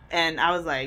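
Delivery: ordinary talk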